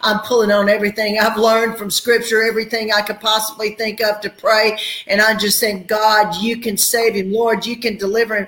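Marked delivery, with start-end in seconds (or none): 5.9-8.5 re-enacted crying out, higher pitch. Retelling their prayer for a man's life, crying out to god. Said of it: "I'm crying out to God".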